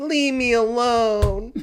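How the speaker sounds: put-on shrill, booming baby voice, one word drawn out. Retelling their own reply after being teased about hairy hands, in a baby voice. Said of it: "it's that same baby voice".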